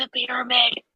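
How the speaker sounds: whispering. Quoting what some moms say, whispering. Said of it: "I had to whisper it".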